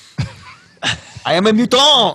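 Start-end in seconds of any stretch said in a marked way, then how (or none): 1.3-2.2 high mock French accent. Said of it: "Wolverine, what are you trying to say here?".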